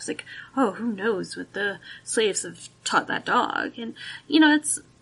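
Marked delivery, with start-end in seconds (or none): 0.6-3.8 dripping sarcasm with mock wonder. Acting out an attitude toward slaves' dogs: sarcastic mock voice. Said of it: "I'm being quite sarcastic".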